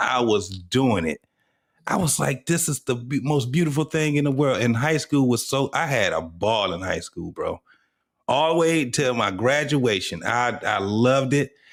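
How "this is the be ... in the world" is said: ordinary delivery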